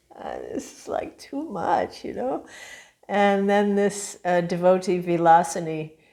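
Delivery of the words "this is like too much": put-on soft, breathy, tearful whisper. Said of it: "I remember I just started crying".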